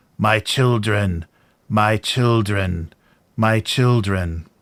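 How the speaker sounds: crude, primitive, synthetic computer-generated machine voice. Voicing a figure repeating words as it starts to awake, in a very synthetic generated voice. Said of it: "very synthetic, very primitively generated voice".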